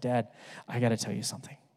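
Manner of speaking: really quiet, barely-there whisper. Retelling a young daughter's words at the dinner table: imitating a quiet whisper. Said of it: "She's whispering really quietly".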